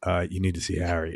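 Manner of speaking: wise-guy, mobster-style tone. Retelling how someone urged a visit to harry: imitating a mob-style warning. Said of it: "the way he said it".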